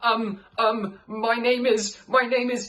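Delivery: voice cracking and pitching up mid-line. Narrator reads Arnie panicking as he gives the barman a name, voice cracking. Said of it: "his voice cracked".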